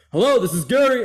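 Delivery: loud, high-pitched yelling. Retelling how their dad answers the phone, imitating Gary yelling on phone. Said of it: "why are you yelling?".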